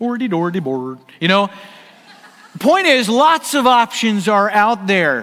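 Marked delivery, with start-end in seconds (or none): 0.0-1.0 put-on Swedish accent with nonsense gibberish babble. Joking about how to pronounce smorgasbord, do a Swedish Chef impression. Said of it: "You got to sound like the Swedish chef a little bit".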